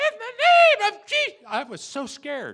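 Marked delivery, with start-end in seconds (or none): 0.0-1.4 put-on very high, very loud, shrill, piercing girlish scream. Retelling facing a demon, he screams in a young girl's voice. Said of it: "I screamed out in the voice of a 12-year-old girl. Check it out".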